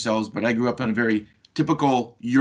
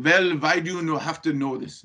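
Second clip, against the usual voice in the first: attempted, put-on Austrian accent, pitched up; 5 semitones higher than usual. Retelling the father's reply when asked for the safe combination, in an attempted Austrian accent. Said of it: "That's my Austrian accent".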